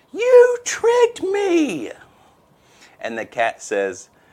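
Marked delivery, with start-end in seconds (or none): 0.2-1.9 very high, loud, shrill squealing rat scream. Telling a joke, voicing the rat being eaten by the cat: rat screaming. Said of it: "the rat is just screaming".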